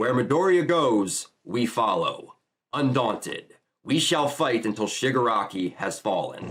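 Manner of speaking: usual speaking voice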